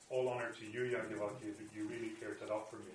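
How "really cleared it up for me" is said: ordinary talk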